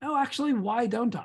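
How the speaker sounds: gentle, kindly, patient, pitched a little high. Speaker demonstrates questioning yourself about being too busy, gentle and kind. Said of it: "gently, creatively, thoughtfully, and kindly with yourself go".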